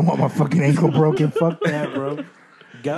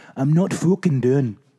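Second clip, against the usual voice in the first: Irish accent attempt coming out Australian. Friends keep calling the accent australian; insisting on continuing in a bad irish accent. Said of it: "That's Australian".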